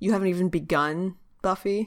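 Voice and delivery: ordinary talk, nothing marked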